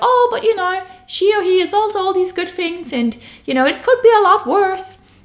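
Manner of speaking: goofy, silly put-on voice, very high. Talking about wanting more from a relationship, voicing an inner thought in a funny voice. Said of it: "I don't know why I'm making this funny voice".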